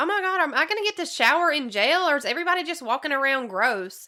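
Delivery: mock offhand, casual, breezy, nonchalant musing. Retelling questions to officers about showering in jail: imitating Shayna's nonchalant tone. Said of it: "she says it so nonchalantly".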